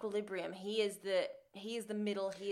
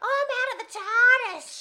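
put-on piercing, very high, very loud, shrill baby squeal; 14 dB louder than usual. Imagining her as a newborn calling to the surgeon, shrill put-on baby voice. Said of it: "She's just so shrill".

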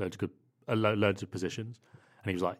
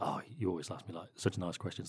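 acted, breathy, half-whispered dripping sarcasm; 8 dB quieter than usual. Retelling an annoyed answer to a question: imitating a sarcastic reply.

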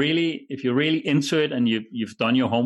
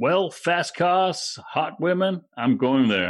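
high-pitched, put-on attempted American accent; 5 semitones higher than usual. Describing a type of Formula One buyer to the others, put-on American accent. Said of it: "Is that your American accent?".

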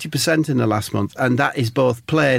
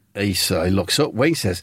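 ordinary talk, nothing marked

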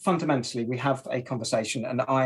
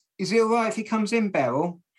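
high, loud call yelled across a room; 9 semitones higher than usual. Retelling arriving at a makeshift pub, imitating someone yelling across. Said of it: "Someone yelled across".

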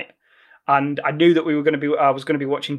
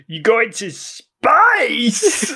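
put-on slow, swooping, drawn-out Russian accent; 8 semitones higher, 3 dB louder than usual. Quoting a viral clip of a game line: Tim Curry Russian accent. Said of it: "Tim Curry doing a Russian accent".

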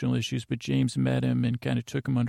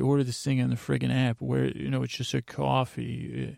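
ordinary talk, nothing marked

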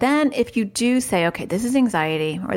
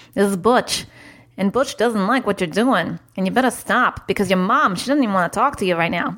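put-on New York accent. Retelling going into an accent as a persona, Butch, put-on New York accent. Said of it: "That's my New York accent".

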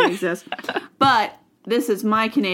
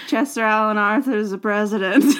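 drowsy, sleepy, half-awake, just-woken voice. Retelling own reply to a morning knock at the door: imitating own sleepy voice. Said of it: "in sleepy voice".

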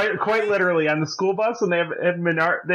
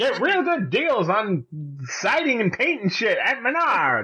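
put-on very old man's sing-song pitchman voice; 3 semitones higher than usual. Retelling an old guy's line from menards commercials: imitating a really old guy. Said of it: "He'd be like".

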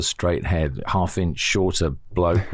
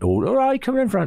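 very high put-on West Country yokel accent. Discussing how the BBC made others out to be yokels, in a West Country yokel accent. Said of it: "come from West Country".

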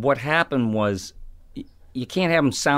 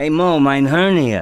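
put-on raised, drawn-out, loud, depressed old-man voice; 3 semitones higher, 6 dB louder than usual. A voice actor explains the character was based on Larry, doing Larry impression.

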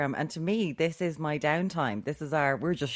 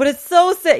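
mock-drunk, much higher and louder; 12 semitones higher, 14 dB louder than usual. Retelling her brother coming home drunk and explaining something: acting out drunk brother. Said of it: "He was shit-faced".

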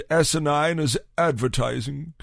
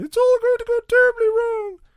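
put-on lady's voice, pitched higher; 4 dB louder than usual. Imitating one of the psychics, a lady: imitating a lady psychic. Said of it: "one of them was a lady".

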